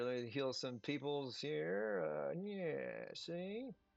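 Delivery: soft mumble, as if to oneself.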